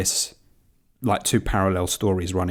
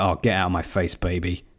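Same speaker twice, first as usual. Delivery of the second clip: ordinary talk, nothing marked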